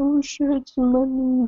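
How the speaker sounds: high, mock worried voice.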